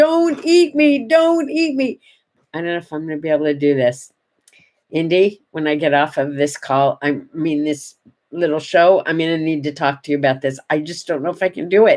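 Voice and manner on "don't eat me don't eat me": put-on very high, very slow, drawn-out, pleading bird wail. Retelling a bird at the window that seemed to scream at them; imitating a bird screaming. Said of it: "she was screaming at me".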